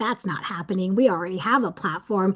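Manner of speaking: ordinary talk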